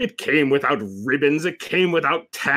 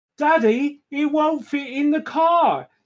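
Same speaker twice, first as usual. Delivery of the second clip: very high pitch, slow pace; 12 semitones higher than usual. Reading a Christmas story aloud, the narrator voices Peppa talking to Daddy, Peppa Pig voice. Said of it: "my best Peppa Pig voice".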